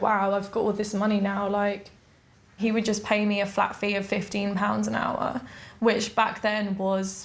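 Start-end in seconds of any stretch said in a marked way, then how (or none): none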